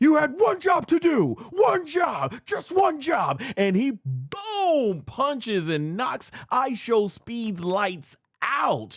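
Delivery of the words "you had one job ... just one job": high, play-acted exasperated shout hammering the repeats. Recapping a match, retelling a wrestler yelling after a loss, retelling a frustrated yell. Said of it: "he starts yelling like".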